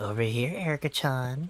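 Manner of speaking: put-on little child's voice. Voicing Erica with a pulled-out child's voice: Erica child's voice. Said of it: "I have to pull a child's voice out of this".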